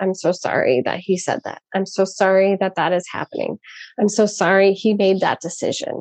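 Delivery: ordinary talk, nothing marked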